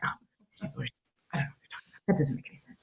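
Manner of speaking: whispered grumbling mutter under the breath. Retelling sitting in church beside her mother: imitating muttering under breath. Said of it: "I would just mutter under my breath".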